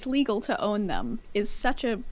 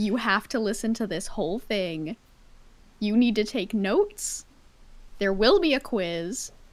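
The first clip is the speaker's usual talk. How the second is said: put-on stern, angry-sounding voice. Playfully, before reading a whole text aloud: fake angry voice. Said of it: "That that's my fake angry voice".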